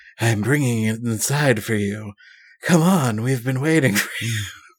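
low, raspy woman's voice from deep down. Reading a story aloud, the woman at the lodge answers you in a low, raspy voice. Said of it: "the woman replies in a low, raspy voice".

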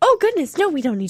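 really high-pitched put-on voice. Describing a character getting back to the lane and covering up, really high-pitched voice. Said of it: "my voice getting really high".

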